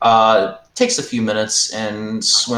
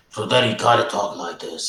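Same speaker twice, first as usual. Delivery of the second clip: mob boss voice talking around cotton-stuffed cheeks. Showing how the Godfather talked with stuffed cheeks: Godfather voice. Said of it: "the Godfather's voice".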